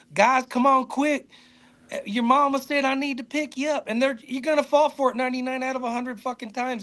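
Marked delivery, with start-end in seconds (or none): 0.1-3.8 friendly, coaxing put-on Southern US accent. Speaking about Southerners, the speaker shows how to fool them: put-on Southern accent. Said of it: "you can put on a Southern accent and tell them".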